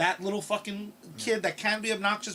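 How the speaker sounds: ordinary talk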